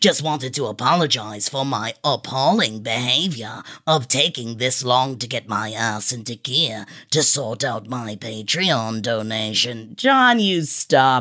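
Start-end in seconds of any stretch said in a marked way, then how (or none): 0.0-9.9 very deep, very soft, hushed English accent. Host reading a Patreon supporter's message aloud, in a Snape accent. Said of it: "you just want to hear me in my snape accent".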